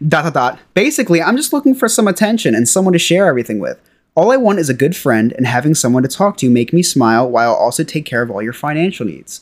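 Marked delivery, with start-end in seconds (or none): none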